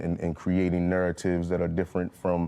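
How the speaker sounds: ordinary delivery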